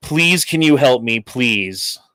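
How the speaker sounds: mock-tearful, pleading put-on crying voice. Retelling how a scratched-up man begged the speaker for help; imitating someone crying. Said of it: "he had tears in his eyes".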